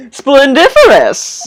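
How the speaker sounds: robust, hearty bellboy voice. Voicing a game character greeting a visitor: bellboy's voice but more robust. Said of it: "Kinda doing the bellboy's voice, but a lot more robust".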